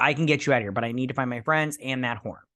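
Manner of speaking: ordinary delivery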